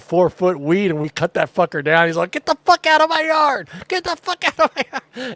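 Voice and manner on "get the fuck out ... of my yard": mock furious, very high-pitched, full-lung shriek. Retelling cutting down a man's pot plants, the speaker reenacts him screaming at them. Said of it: "screaming at us at the top of his lungs".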